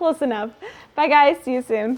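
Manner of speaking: speaking through laughter. Closing a video, the host says goodbye to viewers, laughing while talking. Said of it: "(Nikole laughing)".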